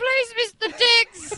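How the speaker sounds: very high-pitched put-on childlike little kid voice. Recalling a stream where they voiced a little kid in a trial, little kid voice. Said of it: "doing the fucking voice of some little kid".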